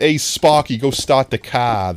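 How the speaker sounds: loud, fake Boston accent, laid on thick. Comparing Bronx and Boston accents, speaker demonstrates a put-on Boston accent. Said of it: "then I'd be more Boston".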